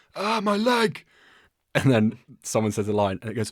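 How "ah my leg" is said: very high, hurt, pained cry. Retelling a background line from a film scene: imitating a guy calling out in pain. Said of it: "you hear some guy call out in the back".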